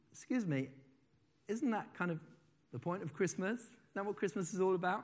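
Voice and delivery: soft, very kind voice. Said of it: "I put on my kindest voice".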